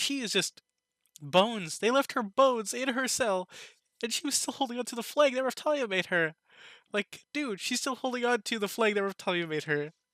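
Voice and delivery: choked-up and tearful. Reacting to what they just saw, the speaker is tearing up. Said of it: "I'm like tearing up right now".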